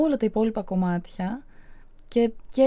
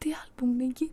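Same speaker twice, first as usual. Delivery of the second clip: whispered, pitched much higher; 2 semitones higher, 8 dB quieter than usual. Retelling an interview, the speaker repeats what they whispered to her, retelling a whisper. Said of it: "ψιθυριστά".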